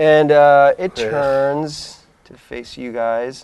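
plain

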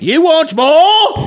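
put-on British accent. Acting out a scene of begging for more gruel: put-on British accent. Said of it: "I'm the only one with a British accent".

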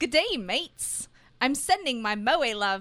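put-on, attempted Australian accent. Podcast host reading out a listener's message in an attempted Australian accent. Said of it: "I'm not even going to try that".

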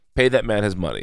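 usual speaking voice

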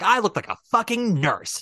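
put-on aggressive, in-your-face delivery. Show how the line was said in the audition, imitating Nicole's aggressive delivery. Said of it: "she says it so like aggressively".

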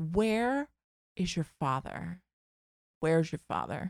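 hushed voice, words repeated twice. Telling a story about dinner, the mother asks where the father is: imitating my mother. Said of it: "Like this, right?".

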